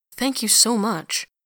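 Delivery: sincere tone. Before leaving, a man thanks the nurse for everything, earnestly. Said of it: "with his customary earnestness".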